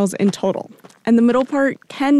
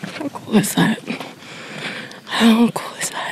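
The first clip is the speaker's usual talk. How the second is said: whispered, barely voiced, soft and hushed; 3 dB quieter than usual. A reporter on a trail spots a California condor, whispering. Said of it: "I'm whispering because I don't want it to go away".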